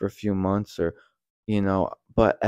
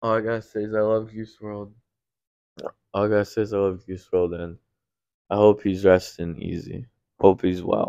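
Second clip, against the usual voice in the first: heartfelt, emotional, close to tears. Talking about a late musician the speaker loves, tearing up. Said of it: "I'm tearing up a little bit".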